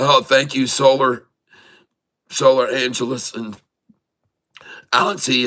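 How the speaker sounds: choked up, tearful. Thanking people by name, needing tissues: tearful. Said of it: "I gotta get tissues now".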